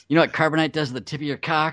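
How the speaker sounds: high-pitched, yelling, screaming rant. Scolding the kids as old Han Solo: mock screaming as Han Solo. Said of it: "screaming at him".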